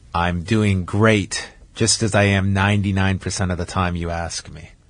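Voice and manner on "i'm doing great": mock sarcastic tone, lower pitch. Retelling the other speaker's reply to a greeting: imitating a sarcastic reply. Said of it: "Very sarcastic".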